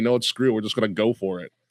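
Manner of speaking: ordinary delivery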